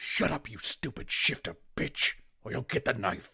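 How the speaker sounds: loud, forceful, angry, powerful whisper. Voicing an unseen speaker heard in the dark: angry powerful whisper. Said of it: "that powerful whisper".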